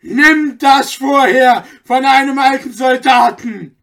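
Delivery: full-throated roaring bellow, very loud and high. Anton roars at the man as he stabs him with a knife. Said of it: "brüllte Anton".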